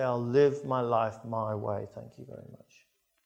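ordinary delivery

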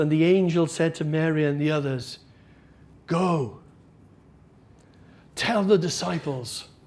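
mock dropped voice. Acting out how a man reads the angel's words from the bible, in a lowered voice. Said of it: "he just lowers his voice".

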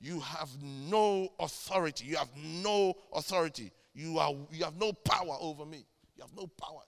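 unwavering, insistent, forceful, convinced delivery. Retelling a demon speaking through a girl: imitating a demon's conviction. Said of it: "They said it with such conviction".

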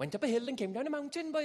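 put-on Welsh accent, pitched very high. Speaker showing how he should talk as a born Welshman, Welsh accent. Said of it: "I should talk like this".

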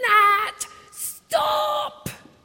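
very high, loud, urgent scream. Retelling a warning to a child running toward traffic: imitating a scream at the child. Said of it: "I screamed at the top of my voice".

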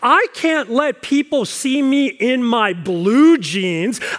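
slow, deeply appalled, scandalized and offended voice. Retelling what Ethel says about her blue jeans, mock-offended Ethel voice. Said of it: "Ethel is even more offended and appalled".

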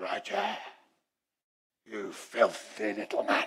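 slow, whispered, put-on demonic voice. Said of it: "we heard a demonic voice coming".

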